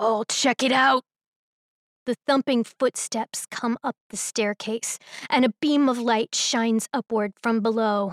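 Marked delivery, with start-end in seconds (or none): 0.0-1.0 low, deep, throaty guttural voice. Reading a story, the unseen figure answers from below in a low guttural voice. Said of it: "The low, guttural voice answers".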